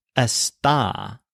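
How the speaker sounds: está said smugly in a fake British accent.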